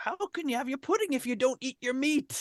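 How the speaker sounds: play-acted frantic, very high scolding yell. Quoting a line that came to mind with a frantic tone. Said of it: "frantic tone".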